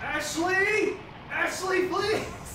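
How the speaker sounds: high-pitched, loud, panicked screaming.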